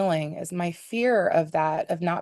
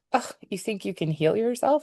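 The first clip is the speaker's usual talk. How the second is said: put-on cruel, nasty voice with scoffing, doubting disbelief; 3 semitones higher than usual. Retelling a nasty inner voice that came up during an exercise: imitating a nasty incredulous voice. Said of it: "saying with great incredulity and doubt".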